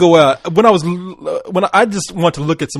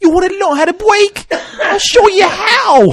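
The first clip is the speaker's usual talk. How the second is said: very high fake Brooklyn accent, how stretched long; 13 semitones higher than usual. Quoting a man from a clip about to be played; fake Mike Tyson Brooklyn accent. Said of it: "with a fake Brooklyn accent".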